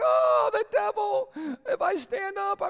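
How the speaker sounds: mock panicked, panicky wail.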